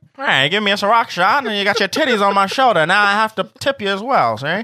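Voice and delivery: put-on old-fashioned 1950s old-timer voice. In a comic bit about getting a Ciroc shot, in a 1950s old-timer voice. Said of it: "you sound like one of those old timers".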